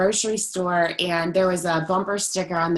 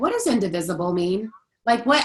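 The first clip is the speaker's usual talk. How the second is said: normal talking voice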